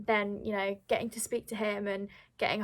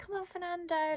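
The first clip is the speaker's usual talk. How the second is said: shrill, very high cheering scream, acted out; 10 semitones higher, 3 dB quieter than usual. Retelling a parent cheering at the tv: imitating dad screaming at tv. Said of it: "my dad sort of, like, shouting at the T V, like, screaming".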